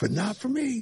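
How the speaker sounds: put-on very high-pitched elderly gentleman voice. Repeating the video line after being asked: imitating an older gentleman. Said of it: "that's what you sounded like".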